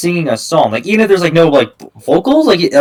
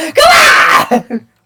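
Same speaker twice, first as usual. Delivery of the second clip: very high shouted outburst; 12 semitones higher than usual. Arguing a point with another person, the speaker talks in a high-pitched voice. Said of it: "Why's my voice getting so high pitched?".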